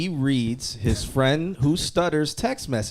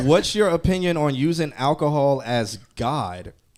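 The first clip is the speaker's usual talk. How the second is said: ordinary delivery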